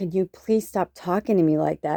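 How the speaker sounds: mock crying, tearful pleading tone. Retelling an ugly fight, quoting own words: retelling own tearful plea. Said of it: "I just started crying".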